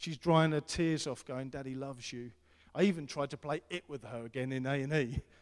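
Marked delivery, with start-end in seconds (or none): 1.5-2.3 imitated whisper. Retelling whispering in Beth's ear in A and E: imitating a whisper. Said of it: "hear me whispering in her ear".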